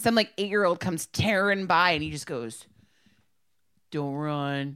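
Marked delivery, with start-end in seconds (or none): 3.9-4.8 put-on very soft, soft-spoken voice. Retelling how a lifeguard told a running kid not to run: imitating a very soft-spoken lifeguard. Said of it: "he couldn't have said it m-, softer".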